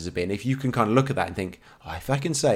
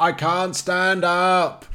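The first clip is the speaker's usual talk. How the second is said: high, very slow, stretched-out shout; 9 semitones higher, 4 dB louder than usual. Retelling runners staggering at a race's end: imitating someone shouting. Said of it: "and then shouting, like".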